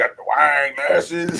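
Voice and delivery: put-on Arkansas country accent. Mocking own voice from the show intro, imitating own country bumpkin voice. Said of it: "I sound like a country bumpkin".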